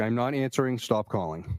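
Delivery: ordinary delivery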